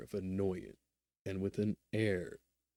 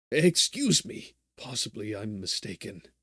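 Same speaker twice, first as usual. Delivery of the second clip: quavering, trembling voice; 7 dB louder than usual. The hero addresses an impatient, waiting man, quavering voice. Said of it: "our hero brought out in a quavering voice".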